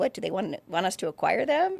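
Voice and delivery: put-on flippant, tossed-off, half-serious joking tone. Recounting a phone call, the speaker retells their own flippant remark. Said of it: "I kind of said flippantly".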